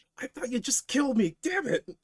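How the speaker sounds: hurting, wincing, very high voice. A character whose attackers jumped him first, wincing in pain. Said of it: "As he's like wincing in pain".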